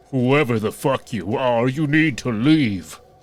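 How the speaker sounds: shout in an assumed, put-on, acted-out voice. Retelling shouting at someone unknown to leave, retelling a shout in deepest voice. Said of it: "put on my deepest voice and shout".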